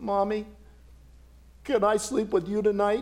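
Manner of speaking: put-on child's voice wavering with a tremor. Narrator voicing a small boy asking his mother at bedtime, with a tremor in his voice. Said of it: "with a tremor in his voice".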